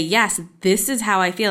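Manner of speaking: ordinary delivery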